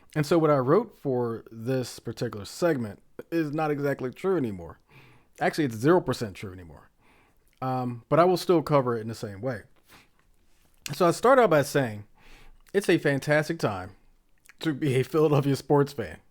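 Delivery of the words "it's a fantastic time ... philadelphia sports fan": giggling, laughing through words, barely getting them out. Reading out a line from an outdated script: laughing while talking. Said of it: "I can't get that sentence out without laughing".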